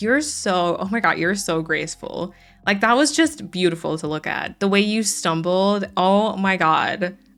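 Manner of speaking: heavy sarcasm, gushing mock admiration. Recalling teasing someone about the way they stumbled: mock-admiring sarcasm. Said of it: "I would say in this like sarcastic".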